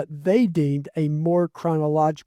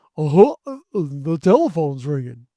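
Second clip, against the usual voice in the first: swooping, silly cartoon voice; 4 dB louder than usual. Describing what a toy says when the house phone rings, in Goofy voice. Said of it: "my kids like my goofy voice".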